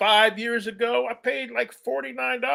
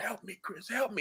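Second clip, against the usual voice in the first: hushed, much softer, barely-breath whisper. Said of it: "she's whispering".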